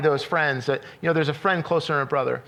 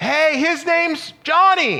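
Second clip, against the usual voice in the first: put-on very high, very slow, drawn-out yell; 11 semitones higher, 4 dB louder than usual. Retelling a son calling from rows away on a flight: imitating a son yelling. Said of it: "he'd yell at us".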